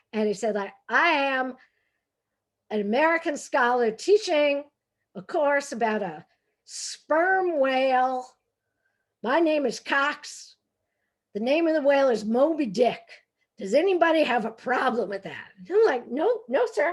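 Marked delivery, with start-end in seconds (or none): 0.8-15.4 clumsy, bad, put-on Southern accent. Recalling a professor's first class, imitating his bad Southern accent. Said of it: "I can't do a Southern accent".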